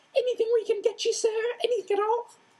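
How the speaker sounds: very high, squeaky little servant elf voice. Fred imitating a house elf for Hermione, high-pitched house-elf squeak. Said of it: "He put on a high-pitched squeak and imitated a house elf".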